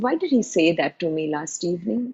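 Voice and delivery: ordinary talk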